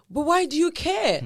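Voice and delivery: high, loud, indignant, fed-up voice.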